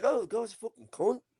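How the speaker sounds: offhand fake English accent. Retelling how people in england say the word: imitating an english accent. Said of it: "they just say it. They're like".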